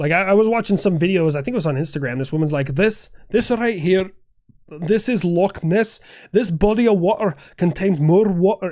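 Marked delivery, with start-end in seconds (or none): 2.7-8.7 put-on heavy Scottish accent, laid on thick. Retelling a woman in an Instagram video, thick Scottish accent. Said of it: "and like hers was thick".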